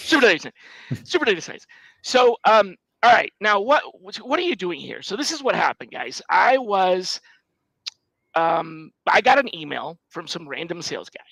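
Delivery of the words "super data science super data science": very fast rapid-fire speech, words tumbling together. Host telling listeners to say the show's name, said really fast. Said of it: "Say it really fast".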